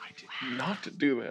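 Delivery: barely audible, very quiet whisper. Asking the others whether they caused the magic: whispering. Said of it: "even as you're whispering".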